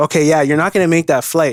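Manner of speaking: ordinary talk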